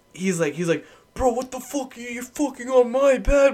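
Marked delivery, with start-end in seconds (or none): 1.1-3.5 mock furious, very high-pitched angry yelling. Retelling a friend's outburst after his bed got flipped: imitating an angry yell. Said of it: "I've never seen him angry".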